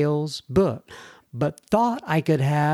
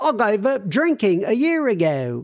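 really bad put-on English accent, pitched up; 6 semitones higher than usual. Reading out a viewer's message, in a bad English accent as Deborah. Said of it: "That's a really bad accent".

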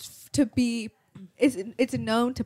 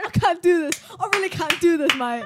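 put-on British accent with raised pitch; 7 semitones higher, 6 dB louder than usual. Retelling what Diana said when her British comes out: imitating Diana's British accent. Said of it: "like her British comes out".

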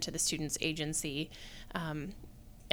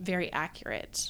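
plain

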